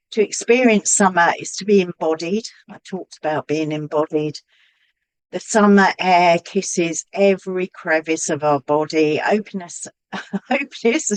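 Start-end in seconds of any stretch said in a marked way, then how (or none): 9.2-11.1 words broken up by laughing throughout. Reading a tarot passage aloud while thinking of the Eros card, laughing. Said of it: "Sorry, I'm just laughing".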